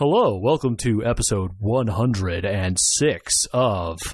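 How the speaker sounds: announcer-style podcast host radio voice. Describing how podcasters suddenly change voices, demonstrating it: radio voice. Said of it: "turn on their like radio voice".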